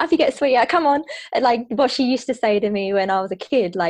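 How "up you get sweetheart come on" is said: cheerful, bright, quick, happy, pitched-up voice. Recalling their mum's voice telling them to get up: imitating mum's happy voice. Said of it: "when she was in a happy mood".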